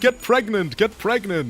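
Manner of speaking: mock high, insistent, demanding shout said twice. Acting out a character retelling what someone kept saying: imitating someone yelling. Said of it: "and kept yelling".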